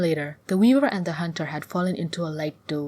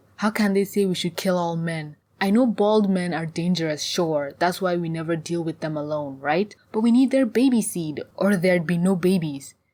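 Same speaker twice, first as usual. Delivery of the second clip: usual speaking voice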